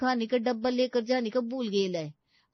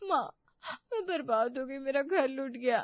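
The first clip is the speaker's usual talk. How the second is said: crying out, words broken by sobbing. A daughter speaking to her mother while a friend visits, crying. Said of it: "इस तरह से क्यों रो रही है?".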